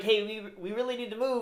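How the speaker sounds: put-on nervous pleading. Retelling a film scene, quoting the priest's assistant: imitating a nervous person. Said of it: "He's, like, all nervous".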